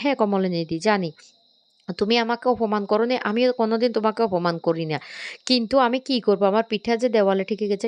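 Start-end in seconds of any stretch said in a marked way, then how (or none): none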